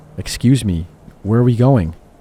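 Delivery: ordinary talk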